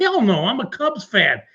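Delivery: ordinary talk, nothing marked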